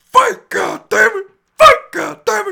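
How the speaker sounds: very loud, very high, drawn-out yell. Recalling a fighter's dad shouting at his son, retelling a loud yell. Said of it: "Sorry for your ears, folks".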